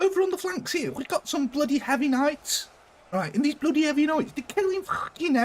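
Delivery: put-on Liverpool accent, very high-pitched. Continuing the bit while playing, the speaker keeps up a put-on Liverpool accent. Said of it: "There was your Liverpool accent".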